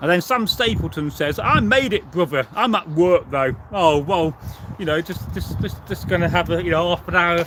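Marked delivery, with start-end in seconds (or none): none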